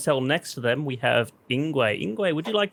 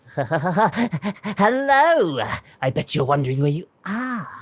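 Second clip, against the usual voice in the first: crazy jester character voice, higher; 3 semitones higher than usual. Voicing a crazy jester-looking apparition greeting the players: crazy jester voice. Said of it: "an apparition appear of some crazy jester-looking creature, and he says".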